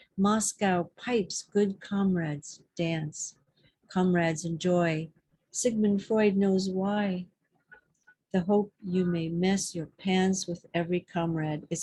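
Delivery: plain reading voice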